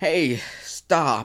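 high woman's voice with a scolding tone. Recalling banging drums in the back of her limousine, imitating a woman saying stop. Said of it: "That's a pretty good impression".

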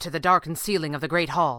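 ordinary delivery

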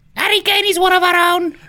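very high, shrill, very loud, booming delivery. Answering a quiz question in a Maradona impression. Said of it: "Is that your Maradona impression?".

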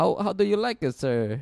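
put-on Kazakh accent. Acting out the man who asked you a question and called you sir, in a put-on Kazakhstanian accent. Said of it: "he has a Kazakhstanian accent".

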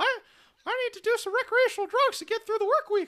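very high, loud, put-on character voice. Showing off a character voice to the others: Mickey voice. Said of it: "I can do the Mickey voice".

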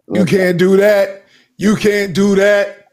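big booming voice. Protesting a plan to bulldoze the tree, booming voice. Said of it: "a booming voice".

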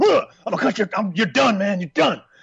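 snarled, menacing, broken-off delivery. Retelling a boxer's threat after the bell: imitating a snarling fighter. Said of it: "he's just snarling".

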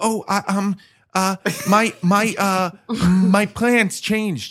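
play-acted fumbling, hesitant, halting stammer, very slow. Retelling running into someone at the gym: retelling own awkward stammer. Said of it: "I saw him awkwardly and I was like".

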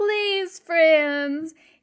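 put-on slightly drunk voice. The mayor stands up after cake to address friends, in a mayor voice. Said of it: "I've lost my mayor voice".

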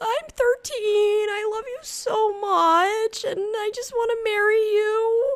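acted, drawn-out, very high, slow, weepy sob-talk. Retelling meeting a YouTuber on the radio at thirteen: imitating own past crying. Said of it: "crying to him".

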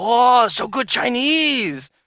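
put-on Chinese-accented English. Retelling a teammate's reply after a thank-you in a game: imitating a Chinese player's accented English. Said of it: "that's exactly how he sounded".

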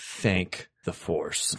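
quietly, under the breath. Reacting in character to aviators falling into their lap: said quietly. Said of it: "I say it quietly so no one hears it".

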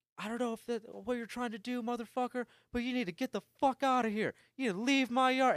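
very high-pitched, rushed, fast, angry furious yelling. Retelling a man opening their front door, retelling his yell. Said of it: "He opens up the front door and like yells".

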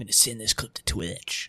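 sneaky, hushed, whispered voice. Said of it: "asshole in the chat that's like".

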